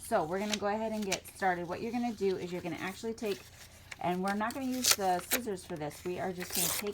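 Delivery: ordinary delivery, nothing marked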